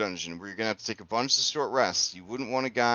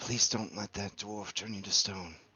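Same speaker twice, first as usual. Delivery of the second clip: hushed, soft, pleading half-whisper; 6 dB quieter than usual. The narrator voices her as she hugs the player's character, half-whispering. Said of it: "she whispers".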